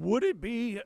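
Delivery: voice breaking on the words. Discussing NFL linebackers, starting to ask a question as the voice cracks. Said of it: "my voice just cracked".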